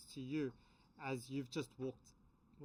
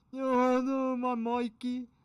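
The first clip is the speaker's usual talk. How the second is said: put-on very drunk man voice, higher and louder; 9 semitones higher, 13 dB louder than usual. Voicing a charmed character who hugs a player: really drunk guy voice. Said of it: "like those really drunk guys that sounds like".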